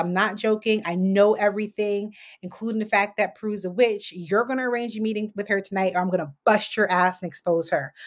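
ordinary talk, nothing marked

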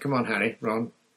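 ordinary delivery

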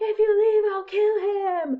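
shrill, very high, full-volume yelling scream. Recapping a movie scene where a man yells out a door, retelling a yell. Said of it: "he's yelling out of this door".

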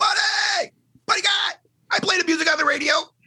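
shrill, very high yell. Retelling yelling out from the crowd during a show: imitating own yell. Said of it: "And I yell".

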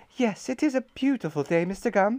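said with a smile. Reading a story aloud, voicing the shopkeeper answering Mr. Gum: smiling. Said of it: "she smiled as she measured out".

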